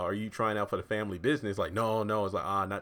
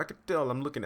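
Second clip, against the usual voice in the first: bad Italian accent, pitched up; 5 semitones higher than usual. Recapping why Vinny was reluctant to lend Benny money, doing a bad Vinny impression. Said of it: "I know that's a bad impression".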